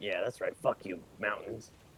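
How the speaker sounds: said quietly under the breath. During a tabletop game, a player's character speaks: muttered under breath. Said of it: "under my breath".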